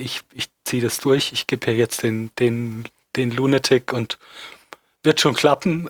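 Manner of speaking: plain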